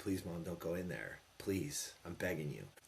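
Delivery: play-acted earnest, desperate begging tone. Retelling asking his mom not to go in: retelling own begging. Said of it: "I begged her".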